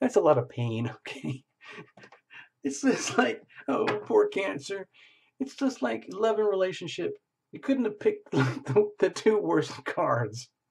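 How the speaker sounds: talking through laughter. Reading tarot cards for Cancer, laughing while talking. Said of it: "I don't know why I'm laughing".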